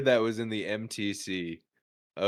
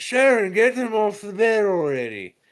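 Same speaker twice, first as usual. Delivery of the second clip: very high, slow yell; 10 semitones higher, 5 dB louder than usual. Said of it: "him yelling at the dogs".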